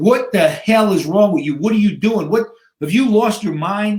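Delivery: acted gasping for breath. Retelling surfacing after a man held him underwater, retelling gasping for air. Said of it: "I'm gasping for a breath of air".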